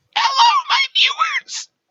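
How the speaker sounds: shrill, loud, squeaky voice, high and squealing. Greeting viewers, the speaker does the Mii voice from Miitopia. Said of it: "I am doing the me voice from Metopia".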